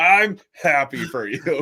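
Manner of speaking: put-on very slow forced cheer, high and loud. Telling someone they forced the emotion, imitating forced happiness. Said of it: "Like you you forced the emotion".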